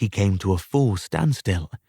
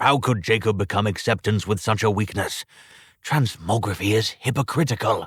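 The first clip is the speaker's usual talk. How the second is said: plain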